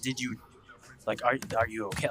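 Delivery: put-on angry tone. Recounting how people reacted whenever there was a complaint, retelling an angry question. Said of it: "It was like an angry".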